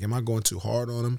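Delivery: normal talking voice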